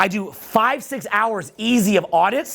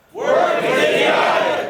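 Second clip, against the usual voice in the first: emphatic, louder, raised in pitch; 7 semitones higher than usual. Speaker leads the audience in repeating a phrase, saying it louder. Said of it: "Say it louder".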